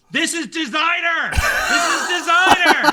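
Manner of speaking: very high, shrill, frantic yelling. A player in a tabletop game, character on fire, rolls on the ground yelling.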